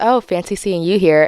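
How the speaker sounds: smoldering, flirty put-on voice. Retelling how he greets her, imitating his smoldering voice. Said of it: "he puts on this voice when he's trying to smolder me".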